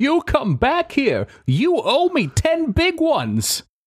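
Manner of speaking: very high, swooping yelling scream. The narrator voices Maligan running down the alley, Maligan screaming. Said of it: "starts running down the alley screaming".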